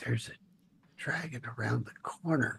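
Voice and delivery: hushed whisper, as quiet as possible. A player's character warning the party during a tabletop game, hushed tone. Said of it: "in the most hushed tone I possibly".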